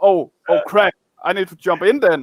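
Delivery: normal talking voice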